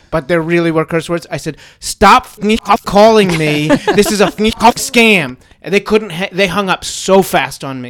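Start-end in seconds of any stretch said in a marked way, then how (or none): 1.8-5.3 acted out, furious, loud, slow, drawn-out shout. Retelling what was said to a phone scammer: retelling own angry yell. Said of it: "I yelled into the phone".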